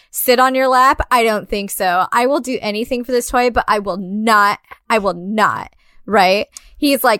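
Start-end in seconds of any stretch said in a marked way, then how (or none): 0.1-5.7 put-on adamant, firm tone. Retelling a movie scene, a character turning down santa: imitating an adamant refusal. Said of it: "very fucking adamant about that".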